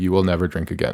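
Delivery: ordinary delivery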